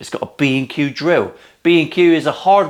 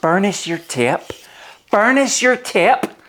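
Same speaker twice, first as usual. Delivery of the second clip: put-on Irish accent, pitched up; 7 semitones higher than usual. Explaining burnishing tape, speaker says it in Sean's Irish voice. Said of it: "I do it in Sean's Irish voice".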